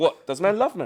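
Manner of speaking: ordinary talk, nothing marked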